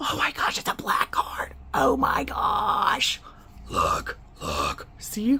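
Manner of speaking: breathy, whispered, otherworldly demon voice. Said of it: "Where's this demon voice?".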